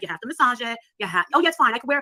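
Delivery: ordinary delivery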